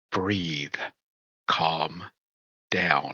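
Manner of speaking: very quiet, soft, hushed half-whisper. Calming a flustered companion in the tower, in character: half-whispering. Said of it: "And I whisper".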